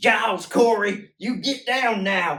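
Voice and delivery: put-on very high, very loud, drawn-out thick Southern accent. Retelling how someone voiced a character's line: thick, crazy southern accent. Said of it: "a really fucking thick, crazy Southern accent".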